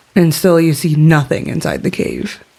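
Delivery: ordinary delivery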